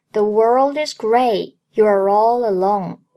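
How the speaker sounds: ordinary delivery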